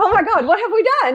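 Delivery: high, horrified, alarmed, panicked outburst. Retelling own reaction after hearing him say he was worried: imitating own panic. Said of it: "so then I start panicking".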